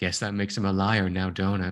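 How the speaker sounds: flat delivery. Describing a film's dialogue, quoting Uma Thurman's character with very dry delivery. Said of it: "very dry".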